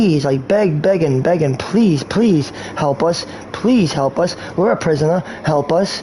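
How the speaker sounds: put-on desperate pleading. Acting out people begging the speaker for help: imitating people begging. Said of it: "these people are begging for mercy".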